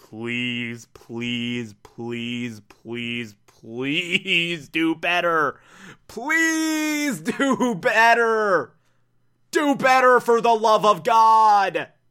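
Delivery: mock earnest pleading, very slow, "God" stretched out. Retelling how Carl Sagan begs humanity: imitating Carl Sagan begging. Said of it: "basically just begging humanity".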